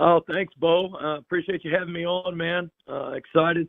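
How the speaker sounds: slow, raspy, hoarse voice. A coach greets the show host after morning mat drills: hoarse voice. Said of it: "the hoarse voice".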